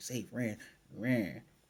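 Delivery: mock mad, heated, angry outburst. Retelling a recap scene where a character gets mad: imitating an angry character. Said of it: "And he gets all mad".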